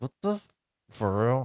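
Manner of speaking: tiny, hushed half-whisper under the breath. Retelling own comment during a movie: imitating own half-whisper. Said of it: "I think I whispered".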